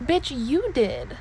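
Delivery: loud, slow, sassy delivery.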